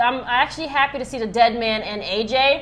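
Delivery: ordinary talk, nothing marked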